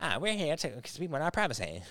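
high, whiny, mocking put-on voice. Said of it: "You sound just like 'em".

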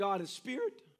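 voice cracking. Speaking about god, the speaker's voice accidentally cracks like a teenager's. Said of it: "Teenage voice came out".

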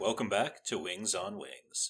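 professional radio announcer voice. Welcoming listeners back to the show: radio voice. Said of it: "It's [name]'s radio's voice".

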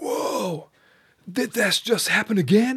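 mock, very high, startled, drawn-out cry. Telling a story, the speaker quotes a man who looked up at the TV, retelling a startled call. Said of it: "schreckt er auf ... Und ruft".

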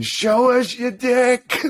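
very high, stretched-out, drawn-out screaming. Retelling people in a car screaming out the window, imitating someone screaming. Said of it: "they're screaming".

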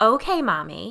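lilting sing-song voice, pitch rising and falling. Reading a story where a daughter answers her mother: sing-song voice. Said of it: "in a sing-song voice".

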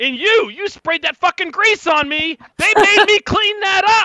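very loud, high-pitched, shrill shouting. Voicing a guard who spots a player on the street: shouting. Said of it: "he immediately shouts".

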